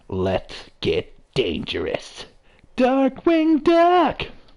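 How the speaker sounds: very high, swooping, drawn-out call. Joking while playing, doing a Darkwing Duck impression. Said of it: "That was a pretty good impression".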